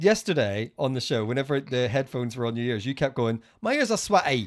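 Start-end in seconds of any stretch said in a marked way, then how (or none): 3.6-4.5 pitched-up, put-on proper little Essex accent. Tease someone about what they kept saying on yesterday's show, imitating an essex accent. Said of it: "You have a proper little Essex accent".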